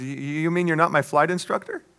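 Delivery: play-acted, unsteady, shaky, quavering, trembling voice. Telling a story, the speaker voices the pilot's reply, retelling a shaky voice. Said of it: "The pilot with a shaky voice says".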